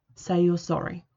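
ordinary delivery

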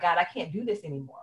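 acted tearful, crying pleading voice. Retelling breaking down on the stairs of the house: retelling own tearful plea. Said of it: "breaking down, crying".

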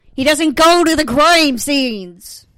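very loud, high, mock-furious, exasperated rant. Ranting to Dad about a character, exasperated, mock-angry. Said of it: "I'm so mad right now".

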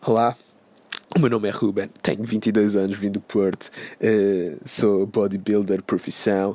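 low, slow mock English-tinged Algarve Portuguese accent. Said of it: "isto agora parece um filho de Zezé Camarinha e de inglês reformado no Algarve".

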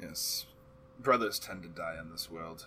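very low, soft, hushed dark-elf voice. A game master voices a drow elf answering the players, drow elf voice.

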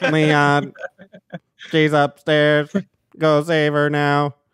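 put-on synthesized, robotic speech voice. Retelling a scene where a machine carries a woman's voice; Stephen Hawking voice. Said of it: "it was like a Stephen Hawking".

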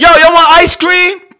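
shrill, booming, very loud high-pitched yell. Retelling calling neighborhood kids when the ice cream man comes: imitating own yelling. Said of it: "I'm yelling down the block".

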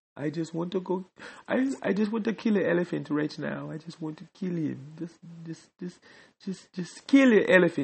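Nigerian accent coming out. Tired and sad at night, talking to listeners, Nigerian accent coming out. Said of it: "my Nigerian accent comes out".

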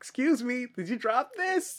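shrill, very high, loudest-possible yell, acted out. Retelling how the gnome acted obvious: imitating a gnome saying it as loud as possible. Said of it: "as loud as possible".

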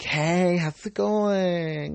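very high, slow, put-on affected manner.

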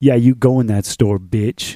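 loud, menacing, ominous voice. Recounting what a man said before he drove away, retelling an ominous threat. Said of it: "he said very ominously".

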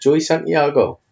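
wonky Geordie accent. Speaker playfully repeats a band member's name, odd attempt at geordie accent. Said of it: "I don't know what accent that was".

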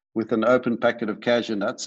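usual speaking voice

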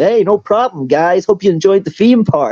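put-on Californian American accent, pitched very high. Retelling how the man who brought them to China answered their thanks, in a Californian American accent. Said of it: "responds in like the most Californian, like American accent".

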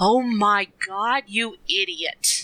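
mock crushingly disappointed voice, very slow. Retelling a different voice coming over Donna's headset, retelling a disappointed tone. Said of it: "it's like the most disappointed tone you've ever heard".

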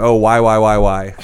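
ordinary delivery

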